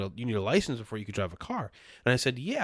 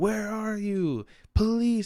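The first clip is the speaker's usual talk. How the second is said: acted-out scream, higher; 9 semitones higher than usual. Retelling a subway video where a man screams for police: imitating someone screaming for police. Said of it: "he's screaming for the police".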